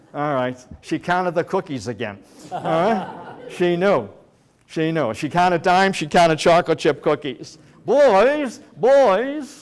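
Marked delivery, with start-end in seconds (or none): 7.8-9.6 very high, stretched out, angry and stern. Remembering how she called him and his brother, imitating her calling the boys. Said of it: "I can hear it".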